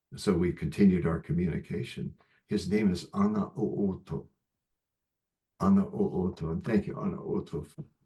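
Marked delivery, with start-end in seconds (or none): 2.5-7.7 grateful voice welling up with tears. Speaker sharing a name he was once not allowed to share, tearful voice. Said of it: "You can hear it in my voice".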